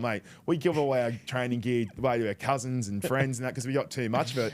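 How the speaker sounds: plain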